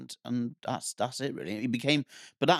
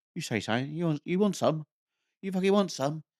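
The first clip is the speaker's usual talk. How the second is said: squeaky, high-pitched, rising little man voice; 6 semitones higher than usual. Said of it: "He's very high-pitched".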